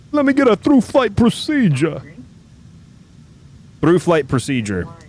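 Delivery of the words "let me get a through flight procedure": put-on Italian-style accent. A player trying to taxi, stuck in a put-on Guido accent. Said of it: "I can't stop with the Guido accent".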